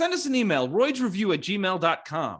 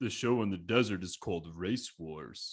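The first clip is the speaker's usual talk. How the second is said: very low, very quiet, clearly enunciated; 11 semitones lower, 10 dB quieter than usual. Explaining how to do the voice, then quoting a movie line: Vin Diesel impression. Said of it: "the key to doing a Vin Diesel impression is to do a Sly Stallone impression and enunciate".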